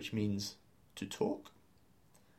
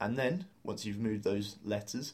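normal talking voice

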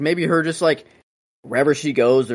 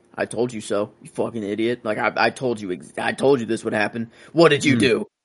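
put-on angry voice, slower. Retelling a scene where Professor X storms in at Wolverine, mock-angry Professor X. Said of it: "Professor X coming in pissed".

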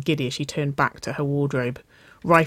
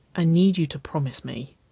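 low murmur. Wynona asking Waverly for a promise in the bedroom, murmured. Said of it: "Wynona murmured".

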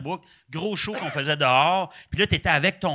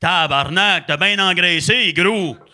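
big, hefty, very loud voice; 2 semitones higher, 7 dB louder than usual. Recounting a voice behind them at Ben's wedding, imitating a big loud voice. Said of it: "j'entends derrière moi une grosse voix".

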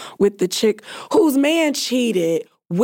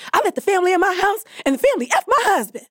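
mock very high, fast, all-excited outburst; 11 semitones higher than usual. Quoting Terry from the movie Soul Food: imitating Terry, all excited. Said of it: "all excited".

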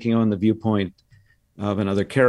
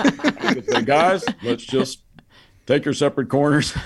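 lowered voice with heavy stress on words; 4 semitones higher than usual. In an old routine, come in after a similar voice with a Dr. Phil impression. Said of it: "maybe a little deeper".

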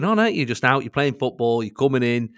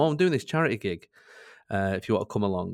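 ordinary delivery

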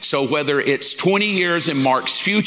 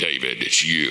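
very low godlike voice. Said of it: "God could have showed up and went".

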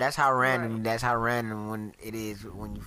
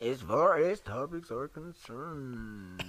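very slow, teasing, mocking echo; 3 semitones higher than usual. Repeating another speaker's words back to them: mocking imitation of another speaker. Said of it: "I was just mocking you".

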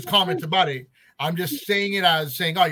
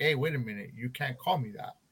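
offended, affronted, indignant tone; 5 semitones lower, 9 dB quieter than usual. Retelling how an employee reacted to a word: imitating an offended employee. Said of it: "this guy got so offended".

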